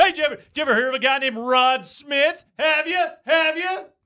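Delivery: very high-pitched sports talk radio caller voice. Speaker breaks into a football debate, doing an impression of a call-in radio caller. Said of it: "that was my impression of an Irvin Joe caller".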